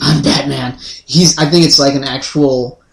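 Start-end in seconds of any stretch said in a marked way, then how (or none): 0.0-0.8 deep, low movie-hero voice, dropped way down.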